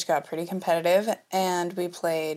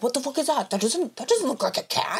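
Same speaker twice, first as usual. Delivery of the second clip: put-on furious, fiercely competitive raging rant, pitched up; 7 semitones higher than usual. Retelling a game night, imitating a dad who is raging and competitive. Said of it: "a raging fucking, like, competitive".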